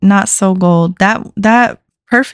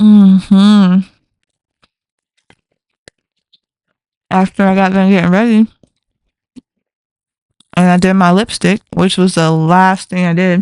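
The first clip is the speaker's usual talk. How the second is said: talking with mouth full of food. Eating a breakfast muffin before work, the speaker talks with mouth full. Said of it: "I shouldn't talk my muffle".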